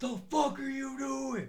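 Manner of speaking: very high, crazed, going-crazy holler. Retelling yelling at the game while driving: imitating his own yelling. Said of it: "What the fuck is that dude yelling about?".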